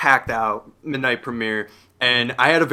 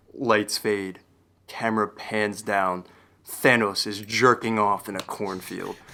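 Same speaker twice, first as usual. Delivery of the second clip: deep, dry, flat deadpan monotone delivery; 4 semitones lower, 6 dB quieter than usual. Retelling a loud comment from a moviegoer behind: imitating a deep, loud monotone. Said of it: "his voice was, like, so deep but loud".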